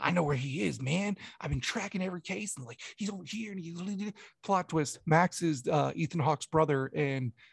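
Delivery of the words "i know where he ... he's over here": put-on amped, wired, strung-out, conspiratorial rambling insistence. Retelling a movie scene where a character talks to cops: imitating Max high on cocaine. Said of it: "who's all, like, on cocaine".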